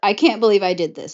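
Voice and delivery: plain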